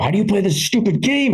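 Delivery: high, exasperated, frustrated griping outburst. Retelling his own outburst while failing at a video game, mock-frustrated. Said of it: "I finally got so frustrated".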